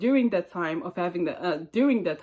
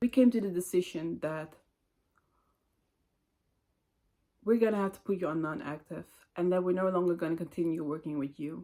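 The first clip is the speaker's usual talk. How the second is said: play-acted very serious, solemn, grave tone; 4 dB quieter than usual. Retelling what a manager said in a private meeting: imitating a very serious tone. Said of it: "in a very serious tone".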